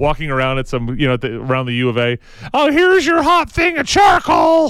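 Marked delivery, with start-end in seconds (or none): 2.5-4.7 put-on cracking teen voice, much higher pitch. Imagining a college kid handing out hot charcoal: Simpsons kid with breaking voice. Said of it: "Just did the Simpsons kid with the breaking voice".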